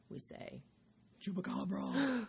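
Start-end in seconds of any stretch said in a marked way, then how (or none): 1.2-2.3 small, eerie, spooky, creepy voice. Showing how the household says chupacabra: little creepy voice. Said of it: "You gotta use your creepy voice".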